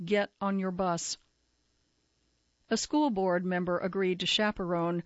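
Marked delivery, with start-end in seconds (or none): none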